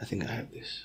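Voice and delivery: very quiet whispered aside, low voice. Speaker giving a talk, dropping into a brief aside: whispering.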